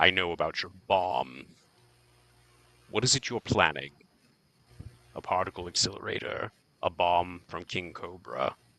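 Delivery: low, soft, crackly voice-modulator sound. Narrator voicing a foe walking to meet you, crackling voice-modulator voice. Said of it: "crackle of whatever uh, sort of voice modulator".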